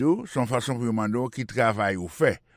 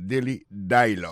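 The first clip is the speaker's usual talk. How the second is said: dialogue with stress on first syllable di; 3 semitones lower than usual. Explaining English word stress in French: stress on di of dialogue. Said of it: "accent tombé sous premier syllabe là".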